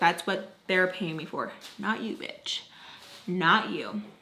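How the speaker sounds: muttering under breath. Retelling a reply said back under the breath: imitating muttering under breath. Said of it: "mutter underneath my breath".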